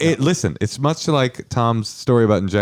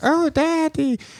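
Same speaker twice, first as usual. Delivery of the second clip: very high, squeaky cartoon baby voice. Recounting a night with a woman who talked in a Muppet Babies voice. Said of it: "in a literal like Muppet Babies voice".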